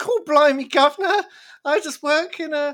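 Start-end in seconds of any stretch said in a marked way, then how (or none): 0.0-1.2 put-on, loud, exaggerated London British accent, raised. Describing a character who lives in London, doing an Oscar Isaac British accent. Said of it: "that's a emulation of Oscar Isaac's British accent".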